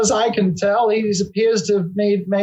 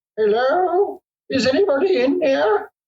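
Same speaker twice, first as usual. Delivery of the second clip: high, quavering, tremulous voice calling out; 6 semitones higher than usual. A voice calls out from the mouth of the cave after dark, tremulous voice. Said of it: "you hear a tremulous voice kind of call out".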